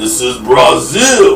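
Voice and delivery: deep, low growled action-hero acting voice.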